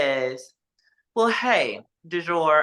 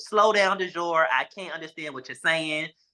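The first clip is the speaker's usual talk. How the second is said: ordinary delivery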